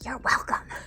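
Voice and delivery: soft whisper projected outward. Playing a character who turns back to a room: whispering. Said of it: "I turn around and whisper out into the room".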